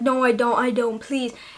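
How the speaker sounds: put-on panicked, pleading tone. Retelling answering the doctor about stitches: imitating own past panicked plea.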